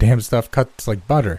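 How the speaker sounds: ordinary delivery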